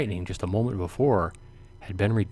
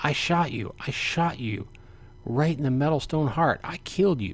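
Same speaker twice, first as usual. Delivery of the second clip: snarling voice jumping up an octave; 6 semitones higher than usual. The archer facing the knight he thought he shot, snarl jumping an octave. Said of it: "snarling voice suddenly jumps in octave".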